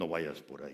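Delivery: very low, very soft radio-announcer voice. Acting out the voice from someone's dream, giving it an announcer voice. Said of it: "Hasta le ponen la voz del locutor".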